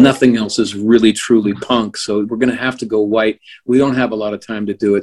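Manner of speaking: ordinary talk, nothing marked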